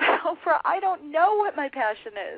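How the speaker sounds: loud, high-pitched yell. Retelling screaming at the TV during a show: retelling screaming at the TV. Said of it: "I remember screaming at the T V going".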